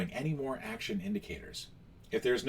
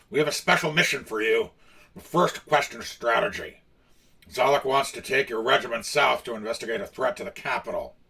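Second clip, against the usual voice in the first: put-on loud, raised, booming orc general voice; 6 dB louder than usual. Narrating a story and voicing the orc general: Grick orc voice. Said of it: "I'm going to do the voice for the orc".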